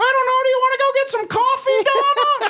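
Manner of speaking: very high-pitched, squeaky cartoon voice. Retelling how she'd answer a woman who couldn't hear her: Mickey Mouse voice. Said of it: "talk to you like Mickey Mouse".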